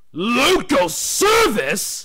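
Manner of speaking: loud, high-pitched snorting, alarmed. Told to take over another engine's local service, snorting in alarm. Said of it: "snorted Gordon in alarm".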